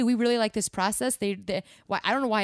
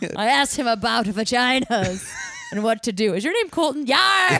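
put-on loud old pirate voice; 3 semitones higher, 6 dB louder than usual. Telling a made-up story about meeting someone, old pirate telling a story. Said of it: "an old pirate telling me about a story".

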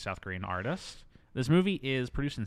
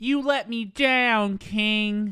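very high, loud squeal with "king" dragged out; 10 semitones higher, 8 dB louder than usual. Speaker acting out a character in a 1959 setting, in a Harley Quinn-style voice. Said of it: "She literally talks like Harley Quinn".

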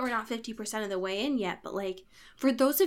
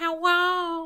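put-on cartoon kid voice, higher and louder; 7 semitones higher, 5 dB louder than usual. Retelling a character calling out from a book: Carl voice. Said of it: "he's like Carl".

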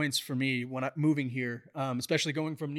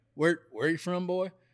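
mock country accent in a put-on voice. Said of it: "they don't sound like that".

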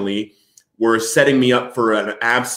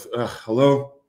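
put-on drunk, groggy voice. Retelling answering a late phone call: imitating a drunk groggy answer. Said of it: "in my still drunken state".

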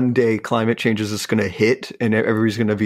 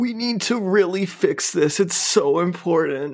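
mock teary, crying, high, drawn-out tearful plea; 8 semitones higher than usual. Mocking a scene of crying on TV: imitating Leonardo DiCaprio crying. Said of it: "Crying, crying on T V".

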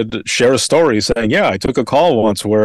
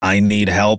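put-on robotic voice, lower and slower; 3 semitones lower than usual. A 911 dispatcher retelling what a caller said, imitating a robotic voice. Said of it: "And they sound kind of robotic".

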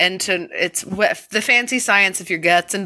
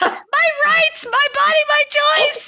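very high, wild creature screech. Voicing a toddler screaming during handwashing, Gollum screech. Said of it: "That was a good Gollum".

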